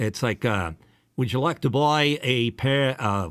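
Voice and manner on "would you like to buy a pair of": slow, put-on Australian accent from back of throat. Explaining that Australians talk in the back of the throat: put-on Australian accent. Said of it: "he's trying to do an Australian accent".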